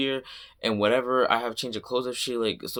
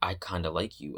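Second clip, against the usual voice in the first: mock-quiet, unwhispered voice, lower and quieter; 6 semitones lower, 6 dB quieter than usual. Retelling what the speaker's mom said behind them on the stairs, imitating mom speaking quietly. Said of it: "I hear her like quietly".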